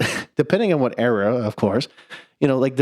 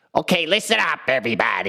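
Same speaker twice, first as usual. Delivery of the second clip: grating cartoon-villain voice with swinging pitch; 2 semitones higher than usual. Recalling a favorite G.I. Joe moment, in a loud annoying Cobra Commander voice. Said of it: "when he has that really loud, annoying voice".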